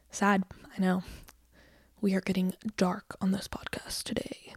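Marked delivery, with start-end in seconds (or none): 2.0-4.5 fake deep voice, breathy near-whisper. Podcast host jokes about getting dark today, in a put-on deep voice. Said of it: "That's my best deep voice".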